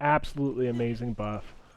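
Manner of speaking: ordinary delivery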